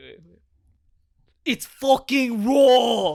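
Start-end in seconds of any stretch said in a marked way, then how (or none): 1.5-3.2 very loud, very high shriek at full blast. Taking turns doing impressions from Hell's Kitchen: Hell's Kitchen impression. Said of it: "We watch Hell's Kitchen".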